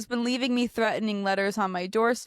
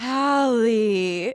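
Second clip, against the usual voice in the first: put-on little child voice, louder; 6 dB louder than usual. Retelling a prank call, imitating a little cousin's reply. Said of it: "giving your little cousin the voice you just did".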